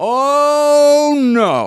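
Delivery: mimicked loud voice. Retelling what an older man said while pointing: imitating a loud voice. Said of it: "in a loud voice".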